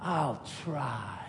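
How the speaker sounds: hissed under breath. Retelling a reply to a much younger woman, hissed under breath. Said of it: "So I hissed under my breath".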